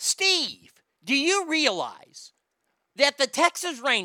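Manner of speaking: high, swooping ballgame announcer voice. Retelling something the speaker once heard Norm Hitchkiss say, as a Norm Hitchkiss impression. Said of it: "I actually heard him say this".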